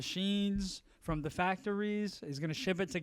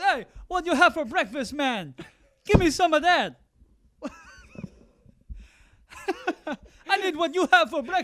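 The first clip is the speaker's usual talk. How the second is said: very high, very loud, swooping Caribbean lilt; 10 semitones higher, 9 dB louder than usual. Retelling what a driver said to a listener, caribbean accent. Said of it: "he's got like this Caribbean accent".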